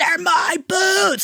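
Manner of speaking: very high, shrill, shrieking yell. Retelling a night a drunk friend ruined boots: imitating own past scream.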